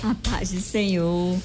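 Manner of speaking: speaking through laughter. Greeting the church brothers and sisters, laughing while speaking. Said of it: "Eu tô rindo aqui".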